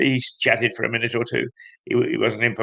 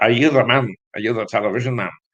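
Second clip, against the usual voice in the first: put-on very broad Scottish accent. Retelling what an older gentleman came over and asked him, broad Scottish accent. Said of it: "in a very broad Scottish accent said".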